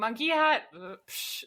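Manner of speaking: mock, dismissive, scoffing voice.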